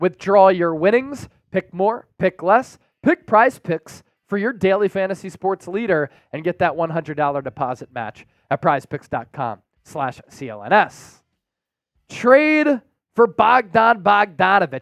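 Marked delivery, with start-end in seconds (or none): 12.1-14.8 slow, natural, unforced Philadelphia accent slipping out. Reading a trade headline, the accent slipping out: Philadelphia accent. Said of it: "I kinda had the Philadelphia accent coming out".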